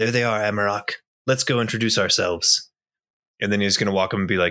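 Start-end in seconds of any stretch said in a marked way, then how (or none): 0.0-2.7 confiding, half-whispered stage-whisper aside. Voicing a character who speaks to a companion on his shoulder: half-whispering to his shoulder. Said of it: "he kind of whispers to his shoulder".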